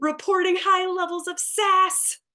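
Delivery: put-on shrill, pitched-way-up, very high yell. Narrator voicing the mom's sadness emotion as headquarters goes on alert: yelling. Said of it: "mom's sadness character yells".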